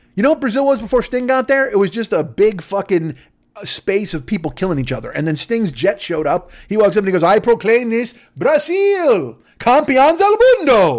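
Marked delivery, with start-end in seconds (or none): 7.3-11.0 put-on slowed-down strange accent. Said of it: "I don't know why he spoke in that accent".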